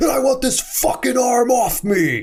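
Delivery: very high, shouted outburst. Retelling a movie scene where a character confronts a surgeon: imitating someone yelling. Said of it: "yelling at her".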